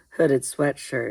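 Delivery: plain reading voice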